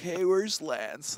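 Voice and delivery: put-on surfer boy accent. Explaining a player's catchphrase to viewers: imitating a SoCal surfer voice. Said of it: "sounds like he's from SoCal or he's a surfer boy".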